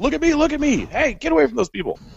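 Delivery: very high-pitched, shrill yelling. Acting out a character stepping up to a pack of dogs: shouting at the dogs. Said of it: "I start shouting at 'em, like".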